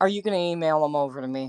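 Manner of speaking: fed-up, exasperated, impatient tone. Repeating his request to have the files emailed: imitating a fed-up tone. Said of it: "He's fed up".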